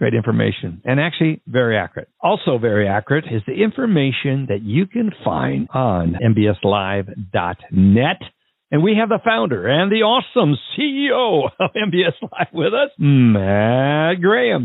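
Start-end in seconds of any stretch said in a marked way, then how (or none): 2.2-14.7 slow, showy game-show host voice. Introducing the founder and CEO as a guest: game show host voice. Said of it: "that sounded a little game hostish there".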